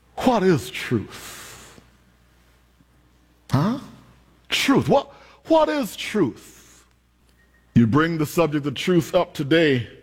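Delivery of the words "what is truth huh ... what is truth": acted-out slow, resigned musing. Retelling Pilate's reply at the trial of Jesus: resigned Pilate voice. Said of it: "you can hear the resignation in Pilate's response".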